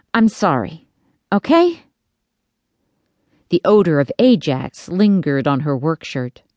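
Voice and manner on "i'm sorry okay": soothing, consoling, comforting tone. Reading a story, a mother holds her trembling daughter, consoling tone. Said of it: "her mom said in a consoling tone".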